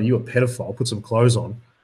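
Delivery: ordinary talk, nothing marked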